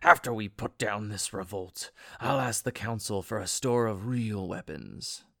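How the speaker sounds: forced out between clenched teeth. Narrator reads a fighting character's line to his group: through gritted teeth. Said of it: "said through gritted teeth".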